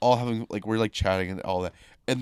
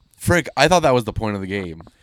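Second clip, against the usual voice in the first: normal talking voice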